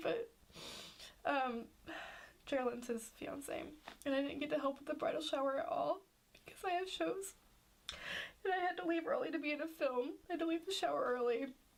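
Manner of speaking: speaking through tears. Speaker explains missing her brother's bridal shower, crying while talking. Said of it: "It's so stupid that I'm crying".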